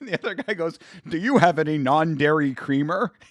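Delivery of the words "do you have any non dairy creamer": exaggerated, overdone fake American accent. Quoting a favorite South Park line where a guy tries to sound American, in a put-on American accent.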